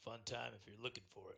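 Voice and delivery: dry, sarcastic, sardonic tone. Speaking in character to a stranger in a tavern: sarcastic. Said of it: "I'm being the sarcastic fun".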